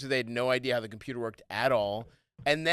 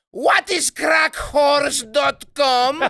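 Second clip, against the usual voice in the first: high, booming, put-on Greek accent yell; 14 semitones higher, 10 dB louder than usual. Recalling their computer-shy mother yelling, imitating her Greek accent. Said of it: "in her fucking Greek accent".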